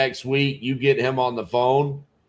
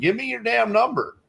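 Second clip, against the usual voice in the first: put-on very high, raspy, rough screaming; 10 semitones higher than usual. Retelling how the seller screamed at a caller: imitating the seller screaming. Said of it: "screaming at Caesar".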